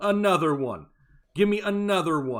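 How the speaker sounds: loud, belted announcer-style shout. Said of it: "He's doing his best [name] impression".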